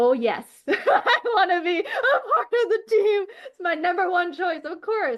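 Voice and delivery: high, slow, laughing, exaggerated polite gushing.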